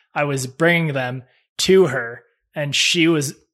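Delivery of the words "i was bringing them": plain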